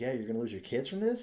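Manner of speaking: acted sympathetic, commiserating, feeling-for-you voice. Retelling how a man talked to crying bar owners, imitating a sympathetic tone. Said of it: "he's like real sympathetic".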